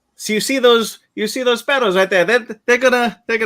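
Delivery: terrible put-on Belgian accent. Retelling a film scene as the actor walks on screen: horrible Kenneth Branagh accent. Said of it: "That's a horrible accent".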